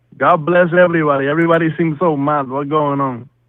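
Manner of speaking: loud, terrible put-on Puerto Rican accent. A caller to the stream claiming to call from Puerto Rico, terrible fake Puerto Rican accent. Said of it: "That is a terrible fake accent".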